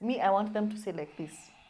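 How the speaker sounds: ordinary talk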